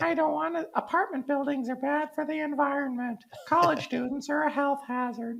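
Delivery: squeaky, caricatured put-on voice. Co-hosts joke about housing opponents; speaker caricatures one in a California NIMBY voice. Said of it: "This is my California NIMBY voice".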